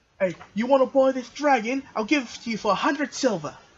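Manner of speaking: put-on high, small-boy character voice. Voicing a little boy who approaches a player's character: voicing a little boy. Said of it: "a little boy goes up to you".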